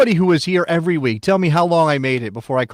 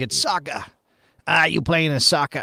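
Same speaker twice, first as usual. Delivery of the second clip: put-on Bostonian Boston accent; 5 dB quieter than usual. Joking about how people in Boston would say the word: Boston accent. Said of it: "if it was Boston. You'd be like".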